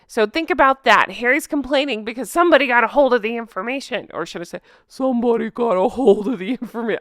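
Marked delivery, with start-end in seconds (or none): 4.8-7.0 cartoon donkey character voice. Repeating a complaint from the news in a mocking Eeyore voice. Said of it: "I'm making him sound like Eeyore".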